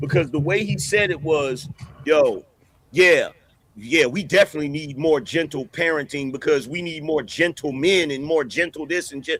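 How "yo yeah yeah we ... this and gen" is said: ordinary talk, nothing marked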